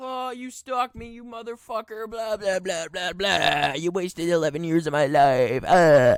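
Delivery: enraged, high-pitched shrieking, screaming rant. Retelling a woman's voicemail in a restaurant: imitating someone screaming. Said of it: "she's screaming in a fucking McDonald's".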